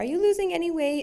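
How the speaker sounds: put-on tiny, sweet, very high, old-sounding voice. Remembering what great-grandpa always asked on visits: Baba's cute little voice. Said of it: "in his cute little voice".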